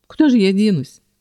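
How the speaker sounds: with a snort. A first-person narrator answers Kels's suspicious question, snorting. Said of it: "фыркнула я".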